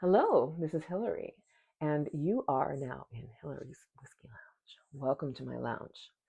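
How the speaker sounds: speaking in a hushed whisper. Hillary welcomes viewers to her lounge while filming at night: whispering. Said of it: "The reason why I'm whispering".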